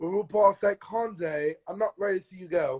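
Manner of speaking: put-on British-accented speech. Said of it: "in my mind she said it in a British accent".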